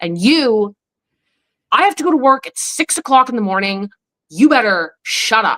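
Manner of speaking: harsh, stern angry father voice. Recalling father turning from mom to the speaker, imitating angry father. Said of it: "then he'd look at me and just be like".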